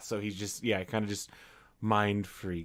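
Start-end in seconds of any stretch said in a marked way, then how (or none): 1.8-2.7 flat monotone character voice, pitched lower. Imitating a monotone movie character's catchphrase: monotone Harold voice. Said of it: "he's very monotone and just stares a lot".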